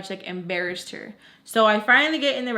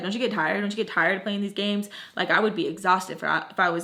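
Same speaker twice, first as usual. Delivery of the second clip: ordinary delivery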